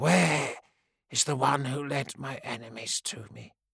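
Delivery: rough, creaky caw like a flock of crows. Narrator reads the raging woman's question to Grimm, croaking like crows. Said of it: "in a voice like the croaking of a murder of crows".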